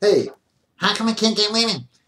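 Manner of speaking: acted, high-pitched, whiny spoiled-brat whine. Imitating how such men talk, mocking whiny voice. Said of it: "I can't do that voice good tonight".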